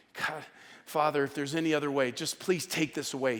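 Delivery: mock, put-on pleading, prayer-like. Retelling a prayer in someone else's words: imitating someone begging. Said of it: "He's kind of bargaining and begging".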